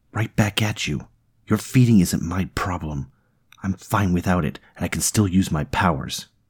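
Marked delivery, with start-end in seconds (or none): none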